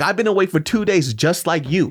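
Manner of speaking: put-on exhausted, furious, high-pitched top-of-lungs scream. Retelling a fight with the director on set: imitating own furious screaming. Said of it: "I'm literally screaming at this fool".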